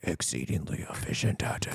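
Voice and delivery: hushed, low, breathy near-whisper. Coaching a co-host on a quote, demonstrating the lower, slightly breathy voice. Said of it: "it is like a little breathy when he says it".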